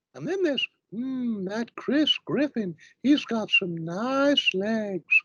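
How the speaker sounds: squeaky, very high-pitched cartoon character voice. Asked for impressions from Family Guy, the speaker does another: Family Guy character impression. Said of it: "do any impressions from Family Guy?".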